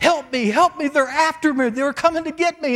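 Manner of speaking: high, loud screaming while crying.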